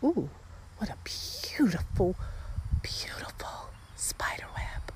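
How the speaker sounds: soft, hushed, reverent whisper full of wonder. Walking and coming upon a spider web; whispering. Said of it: "I don't know why I'm whispering".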